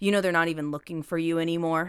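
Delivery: put-on cruel, taunting tone. Retelling how a man openly taunts a woman: imitating someone taunting. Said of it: "he openly taunts her".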